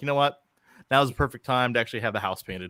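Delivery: ordinary delivery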